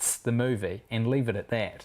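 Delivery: plain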